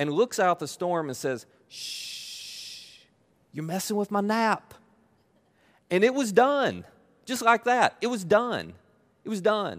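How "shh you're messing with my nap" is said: mock-yawning hush, quieter and slower. Retelling the storm story as Jesus wakes up, retelling a yawning shush.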